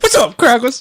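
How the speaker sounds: squeaky, very high put-on caricature voice.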